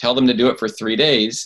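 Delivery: ordinary talk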